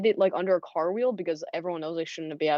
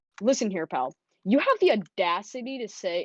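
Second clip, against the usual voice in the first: slow, pretend-angry, put-on outraged voice; 2 semitones higher than usual. Retelling what they said to the kid making the class slideshow, pretend anger. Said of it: "pretend to get really mad at him".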